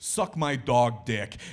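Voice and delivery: put-on surly Brooklyn accent, loud and slow. Retelling a comedy punchline written for a show host: John Oliver in a surly Brooklyn accent. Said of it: "a surly Brooklyn accent".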